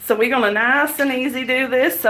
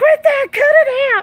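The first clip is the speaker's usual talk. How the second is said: very high, loud, crazed screaming; 14 semitones higher, 5 dB louder than usual. Retelling yelling at a horse in a pen: imitating someone screaming. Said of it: "I started screaming like a crazy person".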